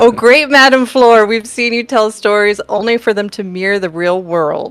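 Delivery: sarcasm laid on super thick, heavy. Answering a psychic character in a game: super hardcore sarcasm. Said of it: "I'm gonna do this with super hardcore sarcasm".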